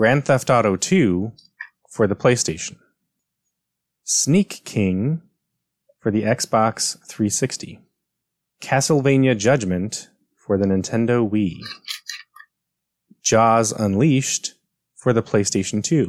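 unhurried, slow reading aloud. Reading quiz game titles and platforms aloud to the players, reading slowly. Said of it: "I'm going to read these slowly".

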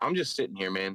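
stern, no-nonsense, dead serious tone. Retelling a woman's reply to the comedian: imitating a stern statement. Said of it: "the most stern statement".

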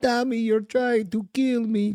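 very high, spaced-out, stoned-sounding voice. Retelling a video of a mom getting stoned: imitating a stoned mom. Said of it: "his mom getting stoned".

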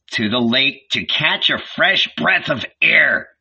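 growled, angry tone. Narrator reads a son storming out, answering his anxious mother: growled. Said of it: "he growled".

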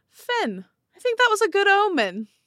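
very high, loud, swooping yell. Voicing a character who yells down to someone below: yelling down. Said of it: "she yells down".

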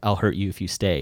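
normal talking voice

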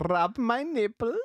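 very high-pitched, fake, bad Austrian accent. Joking after being asked to speak with an austrian accent: put-on austrian accent. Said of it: "That's my Austrian".

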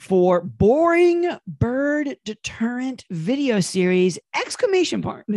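slow, high-pitched, excited reading.

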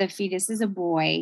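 ordinary delivery

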